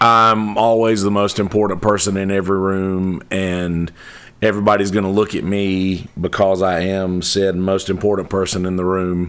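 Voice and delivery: ordinary talk, nothing marked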